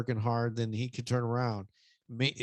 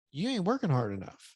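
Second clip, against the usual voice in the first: plain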